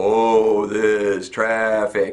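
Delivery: very slow, low, drawn-out drawl. A speaker showing how to vary your voice, saying it really slow. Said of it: "Or you say it really slow".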